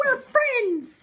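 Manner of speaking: very high, loud, chirpy, cutesy sing-song. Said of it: "at the mom and daughter like".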